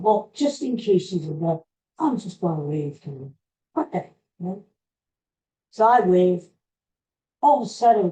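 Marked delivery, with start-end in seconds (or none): none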